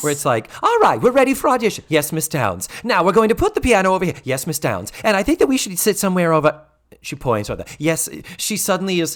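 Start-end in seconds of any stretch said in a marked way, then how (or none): 0.6-6.6 put-on fawning assistant voice, higher and louder. Retelling a scene, playing the sycophantic assistant: Mrs. Garrett as sycophantic assistant. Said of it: "falls into the role of the sycophantic assistant".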